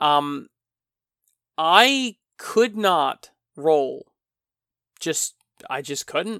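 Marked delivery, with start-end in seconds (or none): 1.6-4.1 very slow, drawn-out, emphatic could not roll. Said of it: "I just could not roll".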